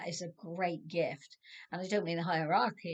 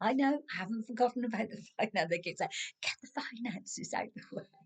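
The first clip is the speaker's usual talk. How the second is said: rushed speech, stifling laughter mid-sentence; 5 semitones higher than usual. You are trying to be very serious with this but find it exciting, holding back a laugh. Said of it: "I'm trying not to laugh too much".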